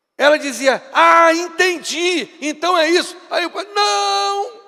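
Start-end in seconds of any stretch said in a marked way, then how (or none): 0.9-3.2 put-on grating, screechy, shrill, irritating old lady voice. Retelling a story about an old woman who misunderstood everyone: shrill, irritating old lady voice. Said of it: "com a voz estridente e irritante".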